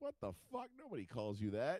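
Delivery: animated, swooping reaction. Picturing his wife downstairs reacting to a joke: imitating his wife reacting. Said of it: "my wife downstairs being like".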